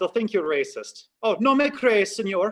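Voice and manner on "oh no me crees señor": put-on high, loud Spanish in a thick Irish accent. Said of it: "speak Spanish in an Irish accent".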